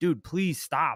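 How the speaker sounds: high, mild half-yell with pleading tone. Retelling getting invaded over and over in a game: imitating yelling at the screen. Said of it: "yelling at the screen".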